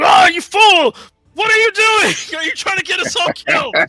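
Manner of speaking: shrill, very high, angry, scolding shouted outburst. Voicing the frog guy reacting to the detonation: frog guy voicing an angry outburst. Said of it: "The frog guy's like".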